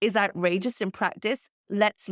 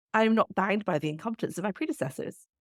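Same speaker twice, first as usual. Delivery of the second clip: usual speaking voice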